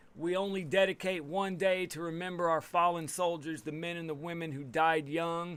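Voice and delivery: ordinary talk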